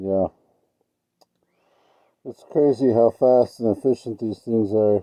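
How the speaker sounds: speech muffled as if through a mask. Commenting on equipment while wearing a mask, talking through a mask. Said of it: "kind of hard to understand when I'm talking through the mask".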